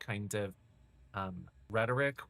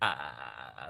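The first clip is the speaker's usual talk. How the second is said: drawn-out, creaky, rattling vocal fry ah; 9 semitones lower than usual. Recalling how she would relentlessly pursue, mimicking her: creaky vocal fry on ah. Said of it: "like the vocal fry thing".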